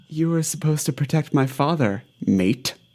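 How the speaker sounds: hushed whisper. In a game, a character pulled close by a player whispers back: whisper. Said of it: "And he whispers back".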